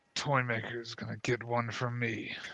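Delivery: muttered under breath. Narrating a character's remark as he walks off, muttering under his breath. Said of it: "he says uh, under his breath".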